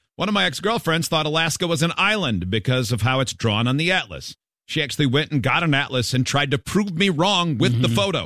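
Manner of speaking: ordinary talk, nothing marked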